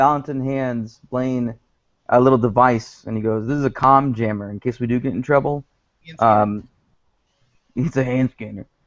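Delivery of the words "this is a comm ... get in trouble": usual speaking voice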